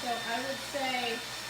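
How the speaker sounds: talking loud over roaring dryer.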